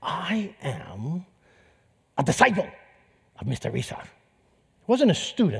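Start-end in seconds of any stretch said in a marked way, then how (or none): 0.0-4.0 terrible put-on Japanese accent, soft and very slow. Retelling what a caller said on the phone, in a terrible Japanese accent. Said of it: "this is a terrible Japanese accent".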